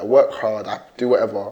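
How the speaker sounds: put-on bitter, complaining tone. Retelling what a man said at a talk: imitating a bitter tone. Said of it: "he just sounded very bitter".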